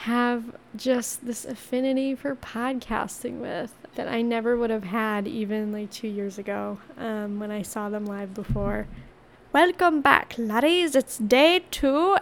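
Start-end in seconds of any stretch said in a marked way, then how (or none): 9.5-12.2 bad, clumsy put-on Irish accent. Podcast host welcoming listeners back on day two: bad Irish accent. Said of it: "I have a really bad Irish accent".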